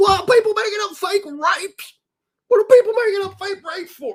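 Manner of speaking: jaw-straining character voice. Playing a character talking to a buddy, in a jaw-straining put-on voice. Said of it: "It's hurting my jaw to talk like this".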